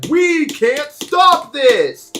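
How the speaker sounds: very high, very slow, booming, drawn-out giant announcer voice. Describing an imagined game, voicing its announcer in a giant announcer voice. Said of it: "a giant like announcer voice comes out and says".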